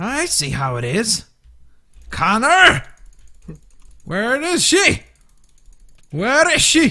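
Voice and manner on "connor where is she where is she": abrupt slide into an Irish accent. Calling out for Connor during a game match: sudden Irish accent. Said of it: "I don't know why I turned Irish".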